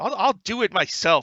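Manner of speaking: high, loud yell in character voice. Voicing a character who swats Lilia away: yelling in character. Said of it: "and he yells".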